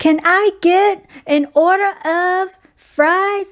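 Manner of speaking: play-acted, slow, very high, drawn-out shouted yell. Recounting ordering at a drive-through, the speaker acts out her own yelling. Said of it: "I find myself yelling".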